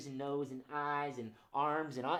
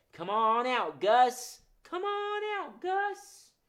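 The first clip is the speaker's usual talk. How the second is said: sweet, coaxing, very high-pitched calling out; 10 semitones higher, 7 dB louder than usual. Leading everyone to call out Gus the Muskrat: sweet voice. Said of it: "Let's call him out in a sweet voice".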